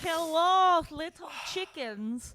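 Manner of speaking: high put-on Russian accent, hello stretched. Opening the episode with a greeting: put-on Russian accent. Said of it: "Was that a Russian intro?".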